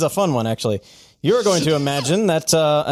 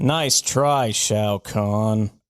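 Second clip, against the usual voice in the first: bad put-on gruff movie-star voice, lower; 6 semitones lower than usual. Doing a voice the others must guess: terrible Harrison Ford impression.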